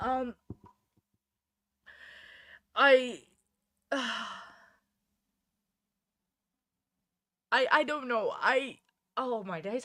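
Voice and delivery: slow, close-to-tears stammer, voice welling up. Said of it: "I think I'm about to cry about verdict".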